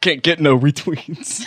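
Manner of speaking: put-on slow, drawn-out old stand-up comic voice. Doing an impression of Rodney Dangerfield in nineteen eighty: Rodney Dangerfield impression. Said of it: "my impression of Rodney Dangerfield".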